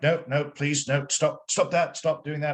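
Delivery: high, fussy, prim upper-class British voice. Recounting a roleplaying game, pushing a paladin away, doing John Cleese as Basil Fawlty. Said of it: "I was doing the John Cleese as Basil Fawlty".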